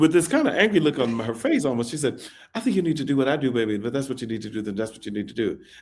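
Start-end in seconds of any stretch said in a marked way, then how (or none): 2.6-5.6 rapid-fire, very fast, rattled-off delivery. Speaker retells what a woman said coming out of the booth, real fast. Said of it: "she said it real fast like that".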